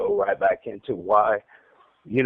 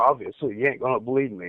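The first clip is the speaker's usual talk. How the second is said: ordinary talk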